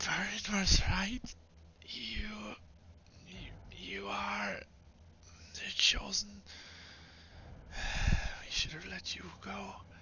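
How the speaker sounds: put-on hushed, faint, whispered little girl's voice. Voicing a dying enemy reaching into a listener's mind, faint little girl whisper. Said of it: "the faint whispers of now a little girl".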